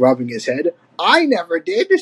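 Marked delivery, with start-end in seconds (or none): 1.0-2.0 with pride. Cranky answers Donkey Kong, proudly. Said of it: "said Cranky proudly".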